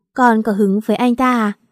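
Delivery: ordinary delivery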